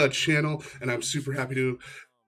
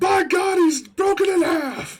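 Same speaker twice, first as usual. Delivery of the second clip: very high, loud, energetic announcer voice; 6 dB louder than usual. Asking someone to come in with that energy, demonstrating in announcer voice. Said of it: "the announcer voice stuff".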